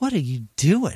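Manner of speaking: put-on disappointed, let-down, grandfatherly old man voice. Retelling being caught eating old cake, imitating Riz like a disappointed grandfather. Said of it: "like a disappointed grandfather".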